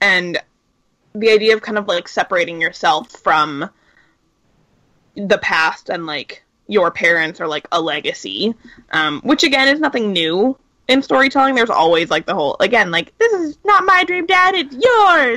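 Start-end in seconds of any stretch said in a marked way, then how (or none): 13.2-15.4 put-on very high five-year-old little-boy voice. Discussing stories about breaking from parents, the speaker voices a child telling his dad: high-pitched five-year-old boy voice. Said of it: "like a high pitched five year old".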